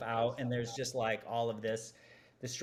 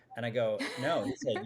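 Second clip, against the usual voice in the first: ordinary talk, nothing marked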